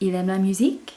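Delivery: pitch rising at the end on musique. Using only the voice to make a question, rising at the end on musique. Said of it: "So my voice is going up".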